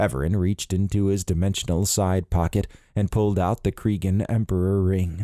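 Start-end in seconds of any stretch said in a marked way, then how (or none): none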